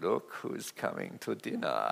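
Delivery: low, creaky voice with Russian accent.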